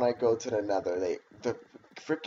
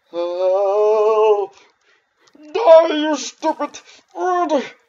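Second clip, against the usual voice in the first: very high, very loud, shrill put-on weird voice; 13 semitones higher, 11 dB louder than usual. Playing a game and addressing a bird: strange put-on voice. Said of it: "Why did I make that voice?".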